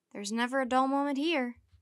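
usual speaking voice

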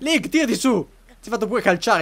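high-pitched, loud shouted call.

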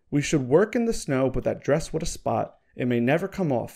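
ordinary delivery

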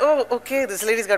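ordinary talk

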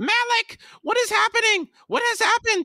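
shrill, very high-pitched, loud shrieking cry. Hormqual reins in and calls to Malik, shrieked. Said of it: "Hormqual reined in and shrieked".

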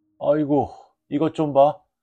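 reverent, awed cry, pitched very high. A narrator reads PT's words as he is shown an old raccoon coat: reverently. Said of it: "PT는 경건하게 말했다".

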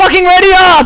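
high-pitched, loud yell mixed with laughter.

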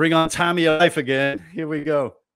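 high, loud mocking put-on voice.

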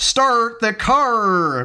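put-on American accent, pitched high. Showing off an accent, a line in a put-on American accent. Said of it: "I can do a Yank accent".

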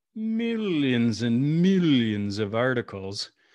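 grand, theatrical villain voice. Speaking to an audience about COVID-19 media, in your best Dr. Evil voice. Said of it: "in my best Dr. Evil voice".

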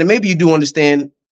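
plain

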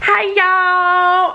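put-on high, loud, drawled Southern accent. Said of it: "do my Southern accent".

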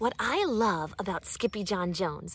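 ordinary delivery

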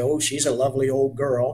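ordinary delivery, nothing marked

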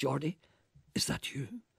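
soft, puzzled, bewildered voice. Narrating a doctor who recognizes Geordie as he arrives, in a puzzled voice. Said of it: "he said in a puzzled voice".

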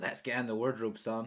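ordinary delivery

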